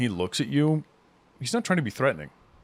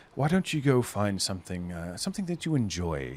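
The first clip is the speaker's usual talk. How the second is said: honey-sweet, coaxing, sweet-talking delivery; 4 semitones lower, 4 dB quieter than usual. Voicing a character who tells a player to go off: honey-sweet voice. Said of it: "he speaks to you with words like honey".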